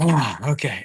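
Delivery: mock deflated voice. Retelling how a guest slumped once the photos ended: imitating a deflated voice. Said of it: "his shoulders just shrunk".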